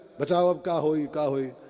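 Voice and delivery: ordinary delivery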